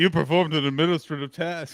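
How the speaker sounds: snappy, sassy clapback delivery. Repeating another speaker's impression of their line: imitating someone's clapback delivery. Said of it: "What was that voice".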